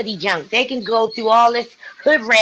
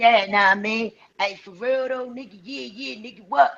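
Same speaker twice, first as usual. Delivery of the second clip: raggedy, slangy street-corner talk; 5 dB quieter than usual. Showing how a friend with a science degree talks: imitating a friend's street talk. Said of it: "let me tell you how he talks".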